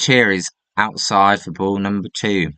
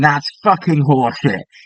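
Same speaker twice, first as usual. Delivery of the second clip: mock screaming outburst, held back; 6 semitones higher than usual. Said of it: "they are screaming".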